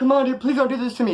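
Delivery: tearful crying voice. Retelling a robbery victim begging the gunman: imitating someone crying. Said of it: "He's crying".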